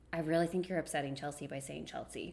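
utterly earnest, dead serious tone, no joking. Retelling the mother's sudden comment, pausing first: imitating mom, dead serious. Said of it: "dead serious".

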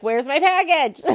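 shrill, very high, very loud yelling. Speaker acts out people yelling at you; imitating people yelling. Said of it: "And they're yelling at you".

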